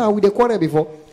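ordinary talk

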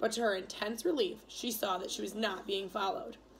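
ordinary delivery

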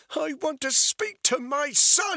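very high, very loud, shrill, slow shout. A woman with a weapon confronts a man who keeps stepping closer: shouted. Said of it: "she shouted".

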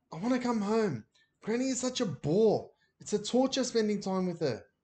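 pleading, begging, imploring. Ben, on the phone, asks to be taken home, pleading. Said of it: "he pleaded".

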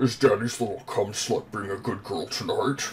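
put-on deep mouth-breather voice. Describing a stock joke character, the speaker voices its line imitating deep, heavy mouth breathing. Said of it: "takes really deep, heavy mouth breaths".

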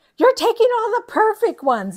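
very high, shrill, very loud, fast yell. Recounting how a woman yelled at the speaker while they sorted threads, imitating someone yelling. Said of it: "She's like yelling at me".

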